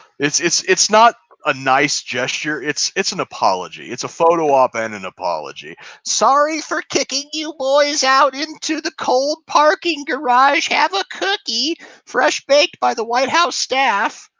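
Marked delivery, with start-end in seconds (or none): 6.1-14.1 put-on very high, sweet old-lady caricature voice. Mocking a cookie handout with an apology: imitating Jill Biden as sweet old lady. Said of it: "the sweet little old lady type caricature".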